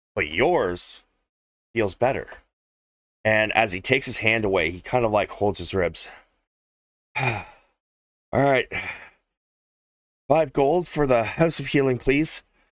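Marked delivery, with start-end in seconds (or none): 7.1-12.4 pained, strained voice, pitched higher. Voicing a hurt cleric asking for payment after healing: strained voice in pain. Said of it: "His voice seems a little more strained now".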